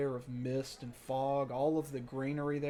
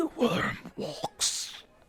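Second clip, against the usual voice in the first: loud, muffled, almost croaked creature voice; 11 semitones higher, 5 dB louder than usual. A dragon crawls from the tower and speaks: muffled, croaked voice. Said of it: "muffled, almost croaked voice".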